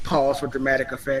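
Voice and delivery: ordinary talk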